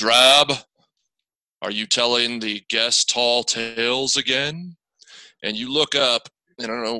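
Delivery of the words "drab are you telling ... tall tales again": slow, big, booming, resounding magical voice. Narrating to players, voicing an unseen figure calling out, in a booming voice. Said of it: "This booming voice that says".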